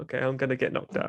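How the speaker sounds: mock crying, fake tearful voice. Imagining the fighter in his corner before the bout: mock crying. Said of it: "a little bit of crying in the corner".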